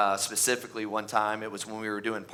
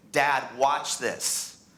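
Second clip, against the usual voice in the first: put-on excited kid voice; 3 semitones higher than usual. Retelling a game night while texting: imitating a son yelling. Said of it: "he's yelling".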